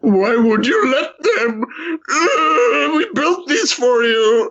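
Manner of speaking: very high, slow, tearful crying whine. Retelling a character upset that the enemy destroyed their altars: imitating a crying Faravius Caron. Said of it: "when he starts crying over Khorne".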